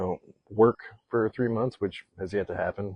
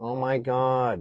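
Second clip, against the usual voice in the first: put-on heated, worked-up New Jersey accent; 3 semitones higher, 4 dB quieter than usual. Imitating the speaker's mom when she gets worked up, in a Jersey accent. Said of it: "like she's from Jersey".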